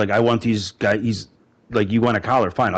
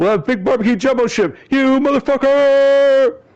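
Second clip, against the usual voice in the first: shrill, very high, loud, wild, unhinged acted yell; 5 dB louder than usual. Quoting a film line about barbecue shrimp, imitating Jeff Goldblum yelling. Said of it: "insane line to yell by Jeff Goldblum".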